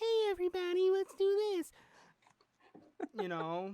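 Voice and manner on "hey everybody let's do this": very high-pitched, put-on girly character voice. The speaker shows a voice they give a game character: girl character voice. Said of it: "I give a character like a girl voice like".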